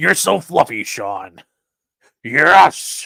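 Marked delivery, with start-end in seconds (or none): 0.0-1.4 put-on, lower-pitched older man voice. Reacting to chat comments, imagining Vince explaining it: Vince McMahon impression. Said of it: "my Vince McMahon impression".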